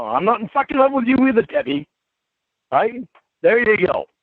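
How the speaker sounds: high, heated shouting. During a heated phone argument, answering Debbie: yelling. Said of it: "Why are you yelling".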